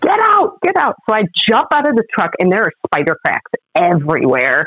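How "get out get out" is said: very high-pitched, shrill yelling. Retelling the boyfriend ordering the speaker out of a truck, retelling a yell. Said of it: "And Jim's yelling at me".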